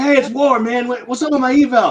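mock confrontational, loud tone. Retelling a man phoning again about his eval, imitating an aggressive caller. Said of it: "call again and get a little aggressive".

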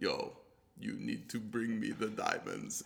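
poor put-on Russian accent, said softly. Podcast host acts out a russian mobster, bad russian accent. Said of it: "My Russian needs a little work".

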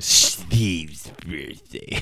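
playful, disdainful, scornful delivery. Telling a story about a buddy's birthday: mock disdain saying Steve. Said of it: "I gotta say it with disdain".

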